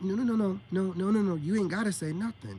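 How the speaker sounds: ordinary talk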